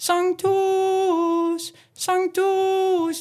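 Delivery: high, loud Sanctus, pushed and pressed on each note.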